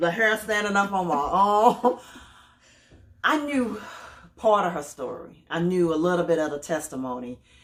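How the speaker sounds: teary voice, on the edge of crying. Speaking to a guest about her testimony, holding back tears. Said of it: "I'm trying not to cry".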